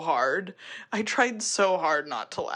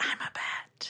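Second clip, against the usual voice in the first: hushed, soft breathy whisper. Retelling a movie scene with a creepy girl in a tree: imitating a whisper. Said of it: "But she, like, whispers it".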